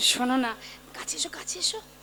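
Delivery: close, soft whisper.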